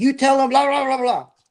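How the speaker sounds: acted out, very high, rising, raving angry rant. Retelling a man at his door ranting at the team's linguist, retelling angry ranting. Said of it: "he's just ranting and raving".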